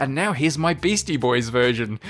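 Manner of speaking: ordinary delivery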